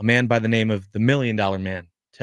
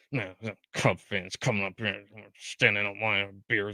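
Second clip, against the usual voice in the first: soft, low grumble under the breath. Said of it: "under our breath go".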